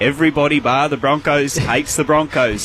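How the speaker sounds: usual speaking voice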